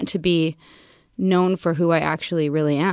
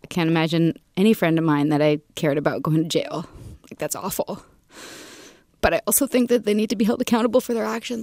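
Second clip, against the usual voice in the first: tearful crying, voice breaking through words. Asked if they feel sorry for them, the speaker answers while crying. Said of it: "I don't know why I'm crying".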